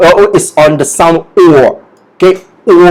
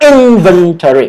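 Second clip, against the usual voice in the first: inventory with first syllable IN stressed. Teaching the word's pronunciation, saying it with the listener, stress on in. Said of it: "Say it with me".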